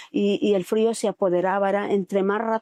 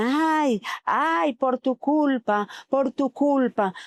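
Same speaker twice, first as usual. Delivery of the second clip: mock voices crying out, high and drawn-out; 5 semitones higher than usual. Retelling a vision of voices in a whirlwind: imitating people screaming. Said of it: "empecé a escuchar gritos y decían".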